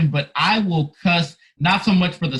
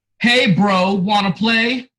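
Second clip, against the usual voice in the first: put-on very slow, drawn-out, easygoing casual older-kid tone; 3 semitones higher than usual. Retelling an older kid's invitation to play pool, imitating the kid's tone. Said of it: "tone and everything".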